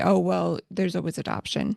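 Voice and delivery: plain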